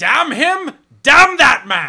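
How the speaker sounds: booming, high, dramatic bellow. Doing a favorite film line as an impression: Tom Wilkinson line from The Patriot. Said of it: "it's a Tom Wilkinson line where he goes".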